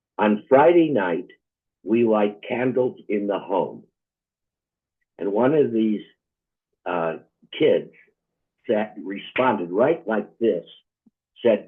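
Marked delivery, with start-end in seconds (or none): 0.2-3.9 put-on accent from Israel. Retelling what a teacher told young students: heavy Israeli accent. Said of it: "an Israeli teacher with a heavy accent".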